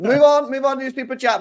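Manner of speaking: high, loud, mock host-style call.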